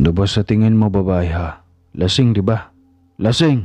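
shouted. Narrator reads Kevin answering his sister's question, shouted. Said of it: "Bulyaw ni Kevin".

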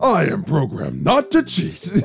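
mocking, imitated uppity, haughty delivery. Repeating a programmed character's line to make fun of it; mocking uppity tone. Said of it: "He sounds so uppity".

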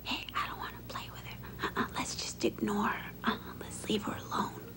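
quick, hushed whisper. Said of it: "what are you whispering about".

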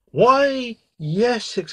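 very high surprised cry. The princess, over her shock at a frog addressing her, exclaims. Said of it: "exclaimed the princess".

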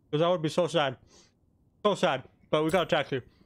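talking with mouth full. Talking to viewers while eating a cookie, with a full mouth. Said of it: "I have a cookie in my mouth right now".

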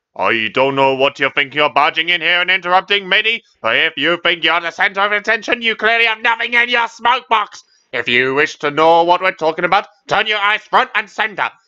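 stern, loud, high barked reprimanding tone. Narrator reads a character rebuking a newcomer who barged in; barking. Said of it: "barked Bradford".

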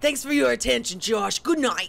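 bad, exaggerated New York accent. Speaker voices a character signing off to Josh, in a bad stereotypical New York accent. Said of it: "stereotypical New York or Brooklyn accent".

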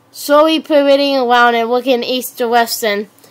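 plain

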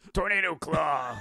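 high, slow, drawn-out shout.

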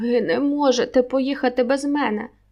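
desperate cry, strangled and choked off. Narrator voicing a man the lieutenant is leaving behind, shouting in a strangled voice. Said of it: "кричить Хамайкіно здавленим голосом".

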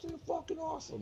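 very high-pitched, excited, thrilled call.

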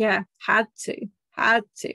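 lightly mocking, sarcastic tone. Retelling a character's reply about a kiss: imitating a sarcastic reply. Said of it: "kind of sarcastically".

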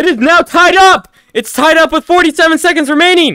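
energized golf commentator voice, high and loud.

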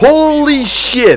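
stunned, high, slow, drawn-out exclamation.

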